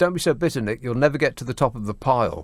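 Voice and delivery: ordinary delivery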